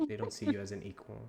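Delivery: whispering. Voicing a character who steps close to Orchid: whispering in someone's ear. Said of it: "whisper in your ear".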